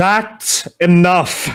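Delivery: high, loud booming voice. Game narrator voices an unseen figure as a spell shatters: booming voice. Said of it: "you hear a voice boom out".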